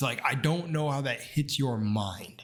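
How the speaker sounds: ordinary talk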